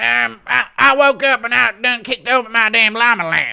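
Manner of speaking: very high-pitched, very loud outburst. Answering a paid request for Bryce calling Stipe about a fire, a Bryce Mitchell impression. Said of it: "Impression of Bryce calling Stipe about a fire".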